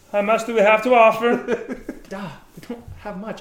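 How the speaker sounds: shrill, very high, loud in-character shout. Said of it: "This is how it sounds when I'm yelling".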